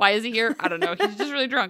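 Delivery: normal talking voice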